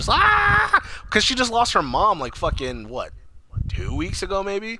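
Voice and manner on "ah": very high, loud, piercing anguished scream. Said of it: "Toni Collette just fucking yelling".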